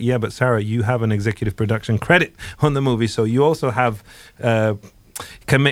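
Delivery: ordinary delivery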